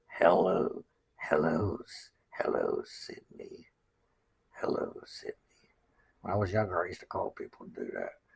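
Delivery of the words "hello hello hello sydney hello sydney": hoarse, raspy, very low, slow, creepy drawl. Showing how to do the creepy voice once used on phone calls: raspy, low, drawn-out. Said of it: "raspy there and very low and draw it out".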